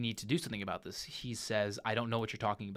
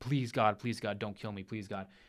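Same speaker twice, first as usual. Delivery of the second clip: put-on desperate begging voice. Retelling a film character's last moments on the floor, imitating begging for his life. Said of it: "begging, like".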